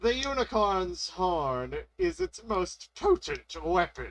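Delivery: voice cracking and breaking mid-line. Explaining how to fight a unicorn, the speaker's voice cracks mid-sentence. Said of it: "Don't mind the voice crack".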